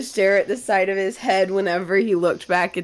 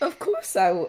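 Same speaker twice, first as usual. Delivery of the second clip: squeaky voice crack; 3 dB quieter than usual. A player in a role-playing game answers the mayor in character, voice squeaks. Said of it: "my voice squeaked".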